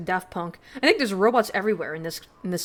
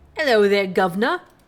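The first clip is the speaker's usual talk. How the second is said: put-on British accent, louder; 7 dB louder than usual. A character greets someone, in a put-on british accent. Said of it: "Why are you British?".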